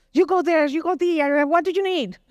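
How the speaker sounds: commanding, bossy, demanding voice. Recounting a lady bossing everybody in a lobby, imitating a bossy demanding lady. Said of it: "very demanding, very bossing everybody".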